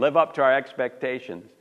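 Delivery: ordinary delivery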